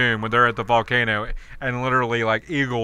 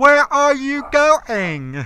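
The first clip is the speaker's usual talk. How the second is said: put-on child voice, very high, loud, very slow, drawn-out; 5 dB louder than usual. Mocking an actress playing a child: imitating a slow child voice. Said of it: "slow, too".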